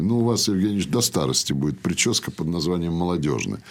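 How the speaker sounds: ordinary talk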